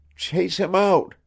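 feeble but cheerful, very high voice. Reading a story where a sick boy speaks from bed: weak, cheerful voice. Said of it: "in a weak, cheerful voice".

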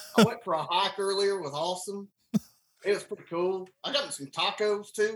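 put-on Southern US accent. Trying out for an acting role, the speaker chats in a put-on southern accent. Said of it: "on a speaking in southern".

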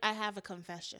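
fake, put-on British accent. Retelling a reality show contestant's confession: imitating a fake british accent. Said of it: "I don't know what accent that was".

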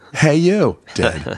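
mock shouting. Voicing a Screaming Skull shouting at enemies: mock shouting. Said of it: "just shouting".

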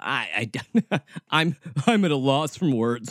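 slow, sarcastic, feigned, stammering speechlessness. Answering own question about corrupt religious systems, sarcastic. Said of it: "I'm being sarcastic".

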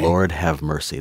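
ordinary delivery

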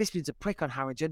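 normal talking voice

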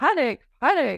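very loud, severe, stern, austere British announcer voice. Imitating the panic button on their desk, in a very austere british voice. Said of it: "in a very austere British voice".

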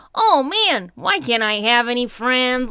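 loud, cheesy, hammed-up ghost voice. Discussing how to voice Casper, doing a cheesy Casper ghost voice. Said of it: "I like the voice is very like".

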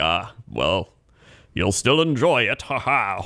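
slow swashbuckling pirate voice with flourish. Retelling a waiter's reply, in a swashbuckling pirate voice. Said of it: "who is this swashbuckler waiter you have?".

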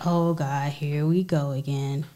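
put-on deep man's voice, very slow, very drawn out. Imitating what men say that starts an argument: imitating men. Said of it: "So your men impressions aren't very good".

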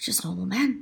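hushed half-whisper, breath only. Retelling a co-presenter's odd live bit on air: imitating someone half-whispering. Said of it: "he just starts whispering to me".

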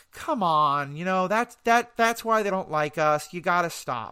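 mock mild, weary nagging tone. Retelling what someone told the comedian, imitating mild domestic nagging. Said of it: "oh, honey, did you leave the dishes out again?".

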